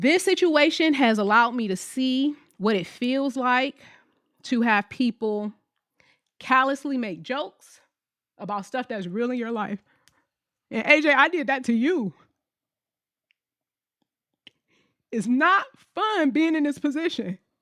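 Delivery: speaking through tears. Speaking directly to A J, crying while talking. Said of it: "Why am I crying so much?".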